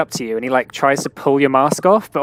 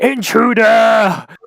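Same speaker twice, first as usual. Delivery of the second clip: booming, high-pitched, alarmed shouting voice; 8 semitones higher, 5 dB louder than usual. Game master voicing a character who raises the alarm, booming shout. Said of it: "his voice booms out".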